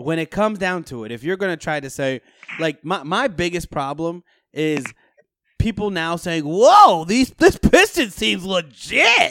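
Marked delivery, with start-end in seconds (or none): 6.4-9.3 slow, put-on sportscaster announcer voice. Mocking people hyping the Pistons team as legit: announcer voice. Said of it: "gotta love [name]'s announcer voice".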